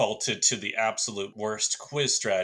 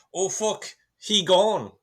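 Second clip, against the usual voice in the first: terrible, fake Irish accent, very high and loud; 10 semitones higher, 5 dB louder than usual. Speaker quoting how they would say it in ireland, bad irish accent. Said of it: "terrible Irish accents to do he gone".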